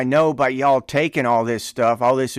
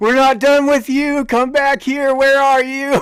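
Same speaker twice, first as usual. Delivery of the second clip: put-on, very high-pitched, loud screaming; 13 semitones higher, 5 dB louder than usual. Retelling screaming at the sergeant from the front leaning rest position: imitating own past screaming. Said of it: "started screaming at him".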